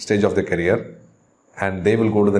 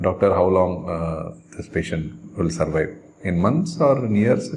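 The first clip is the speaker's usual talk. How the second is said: plain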